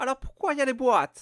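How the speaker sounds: very shrill, very high, loud, put-on Italian accent. Seller quoting a customer, in a fake italian accent. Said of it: "mais j'ai fait l'accent italien".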